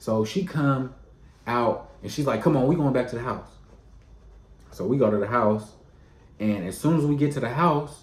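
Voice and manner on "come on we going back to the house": mock irritation, much faster. Retelling how a woman came out after a phone call, mock-irritated. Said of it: "Like she's hot".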